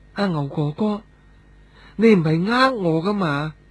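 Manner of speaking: soft, small, little voice. Narrator reads a character's line to Brother Ngau, softly spoken. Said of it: "细细声咁话".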